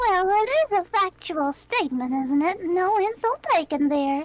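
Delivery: put-on very slow, old Southern granny voice. Voicing the arcade owner behind the ticket desk: old lady arcade owner voice. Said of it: "sitting behind the ticket redemption desk, and offers a wrinkly smile. / sitting behind the ticket redemption desk, and offers a wrinkly smile. / it's nice to try to cheer an old lady up. / it's nice".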